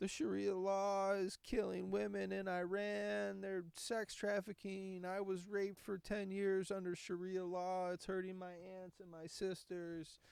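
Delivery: high-pitched, slow wailing cry, "Iran" drawn out. Speaker retells protesters from Iran at a press conference, imitating someone wailing. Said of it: "Like wailing, like crying".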